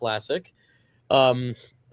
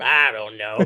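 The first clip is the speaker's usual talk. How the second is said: put-on grumpy puppet voice, lower; 4 semitones lower, 3 dB louder than usual. Asked to act like a ventriloquist's puppet: Walter voice. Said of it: "make it look like Walter from Jeff Dunham".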